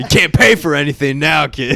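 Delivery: high, loud mock tough-guy voice, menacing and taunting.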